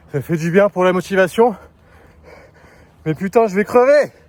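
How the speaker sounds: speaking too loudly. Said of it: "je crois que je crie un peu".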